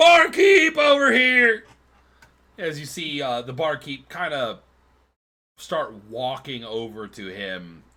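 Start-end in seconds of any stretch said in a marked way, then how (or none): 0.0-1.6 shrill, very loud, high-pitched yell. Voicing a character who stands and waves at the barkeep: yelling.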